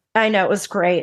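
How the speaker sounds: dry, ironic, sarcastic tone. Answering another speaker's "that's nice" about dating a psychopath: sarcastic. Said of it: "I'm being sarcastic".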